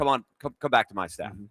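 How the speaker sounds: plain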